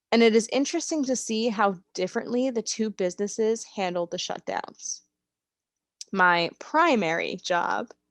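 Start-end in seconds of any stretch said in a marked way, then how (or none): 6.1-7.9 quote marks audibly voiced around primary job. Speaker describing their retail job, with air quotes in the voice. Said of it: "I hope you can hear the air quotes in my voice".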